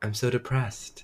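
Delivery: soft, breathy, whispered, level monotone. Retelling a character's line as the episode ends, soft monotone. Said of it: "In like this soft monotone voice".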